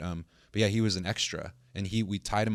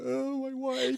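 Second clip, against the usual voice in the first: mock sobbing, higher pitched. Retelling a scene partner's line from a shoot: imitating someone fake crying. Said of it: "he was, like, fake crying".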